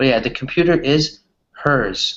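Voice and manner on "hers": loud, slow, overenunciating the final s in hers. Showing learners how to pronounce the final S: loud and slow, stressing final S. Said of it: "now I'm saying it loud, or I'm saying it slowly".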